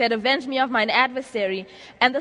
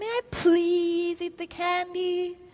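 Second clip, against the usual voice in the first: put-on really cute, high, soft little-child voice; 6 semitones higher, 5 dB quieter than usual. Describing a kid asking mom again for candy, in a really cute kid voice. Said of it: "using the really cute kid voice".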